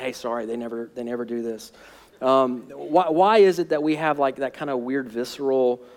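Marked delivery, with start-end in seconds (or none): 0.0-1.7 quiet, half-whispered under the breath. Acting out a churchgoer apologizing to an invited coworker: imitating a half-whisper.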